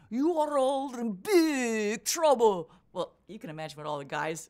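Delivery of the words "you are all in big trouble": booming, drawn-out Scottish brogue. Retelling what a man standing on a running board told the group, Scots brogue. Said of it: "said in a wonderful Scots brogue".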